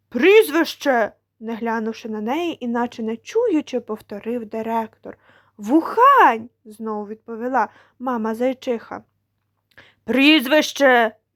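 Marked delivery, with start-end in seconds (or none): 10.1-11.2 raised voice, much louder. A bear school principal demands a surname a third time, raising his voice. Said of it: "підвищивши голос утретє".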